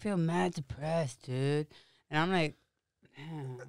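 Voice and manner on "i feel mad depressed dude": slow, dragging, drawn-out dude-speak drawl. Retelling what a guy nicknamed Michelangelo said, the speaker imitates Michelangelo. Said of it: "He sounded like that and everything".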